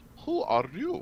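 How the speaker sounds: put-on thick, laid-on, heavy German accent. Narrating a blue-furred tiefling who blinks past the players, in a heavy German accent. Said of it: "with a heavy German accent".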